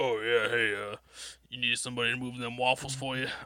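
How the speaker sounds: voice dropped a little. Asked to put on a fake voice, playing someone offering to move waffles: deepened voice. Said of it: "Just like deepen your voice a little bit".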